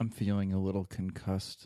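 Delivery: flat, dead, level, toneless monotone. Retelling Knoxville's words on the van ride to the hospital, flat monotone. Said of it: "so just fucking monotone".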